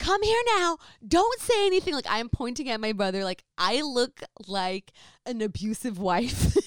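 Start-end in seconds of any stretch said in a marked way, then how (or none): 0.0-1.9 shrill, very high, top-of-the-lungs screaming. Retelling yelling at your brother in front of people, re-enact screaming at the top of your lungs. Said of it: "I am screaming at the top of my lungs".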